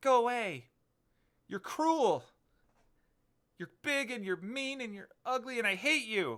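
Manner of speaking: put-on girl's very high-pitched, loud scream. Storyteller voices a girl shouting at a big man: girl shouting. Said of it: "she just shouts".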